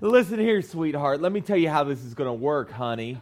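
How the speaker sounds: patronising, smirky, half-laughing, condescending tone. Retelling what a cussing, yelling lady told them, imitating a smirky laugh. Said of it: "this little smirky laugh going on".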